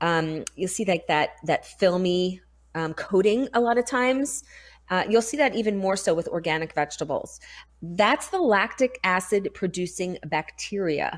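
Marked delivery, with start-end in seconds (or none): 7.8-11.2 slow, careful, deliberate, unhurried delivery. Explaining fermented vegetables, saying a tongue-twister term slowly. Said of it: "I say that slowly".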